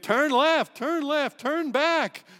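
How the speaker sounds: very loud, barked, hollering, put-on shouting voice. Imitating the car navigator's woman's voice hollering at a driver: hollering GPS voice. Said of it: "she would holler at you".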